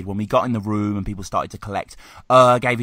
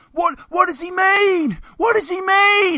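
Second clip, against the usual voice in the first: play-acted drunk heckling yell, very high, slow, drawn out. Retelling a drunk heckler's shouts after every bar: imitating a drunk heckler shouting. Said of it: "drunk off his off imbecile after every bar he'd shout".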